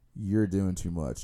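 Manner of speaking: put-on gentle, kindly, friendly tone. Retelling what a friend at the table said: imitating someone saying it nicely. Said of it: "In the nicest way".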